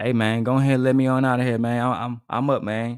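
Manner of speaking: put-on country accent. Retelling a movie scene, voicing the brother at the door: country slang voice. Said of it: "Talking in the country slang and shit".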